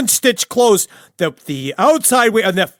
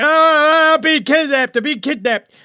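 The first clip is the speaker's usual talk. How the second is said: mock, high little-kid squealing cry; 6 semitones higher than usual. Acting out a squealing girl in the back of a car: imitating a girl screaming. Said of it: "she's screaming like".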